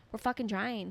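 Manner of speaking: ordinary delivery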